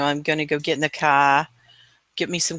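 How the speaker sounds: put-on Boston accent. Telling someone they lack the Boston accent, then demonstrating a Boston accent. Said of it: "you don't have the Boston".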